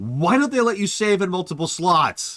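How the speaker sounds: put-on angry tone. Speaker retells a question their niece asked about a game: imitating an angry tone. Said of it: "in like an angry tone of voice".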